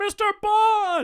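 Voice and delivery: very high, shrill, excited yell, word drawn out. Retelling a movie scene where a character yells a name: imitating Rowan Atkinson yelling. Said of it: "yells his name".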